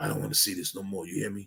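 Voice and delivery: raspy voice, very soft, quick and hushed. Retelling what a man said to the speaker, imitating his raspy voice. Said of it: "he had his real raspy voice".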